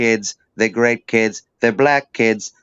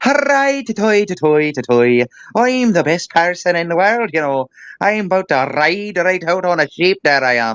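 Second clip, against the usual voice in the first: put-on pitched-up Irish accent with rolled R's; 7 semitones higher than usual. Talking about accents, mimicking how irish guys go: mock irish accent. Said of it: "see Irish dudes run around going".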